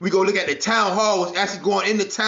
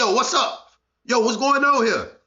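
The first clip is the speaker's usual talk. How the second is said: ordinary delivery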